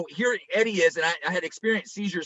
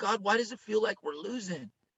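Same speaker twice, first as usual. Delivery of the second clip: play-acted, soft, heartbroken voice through tears; 3 semitones higher, 6 dB quieter than usual. Heartbroken for Eddie, the speaker recounts what they said to God: retelling a tearful prayer. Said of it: "I'm crying".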